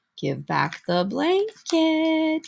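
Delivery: tiny, high, lilting sing-song voice. Hummingbird speaks up to the fleeing Coyote in a tiny Hummingbird voice. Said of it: "said a tiny voice".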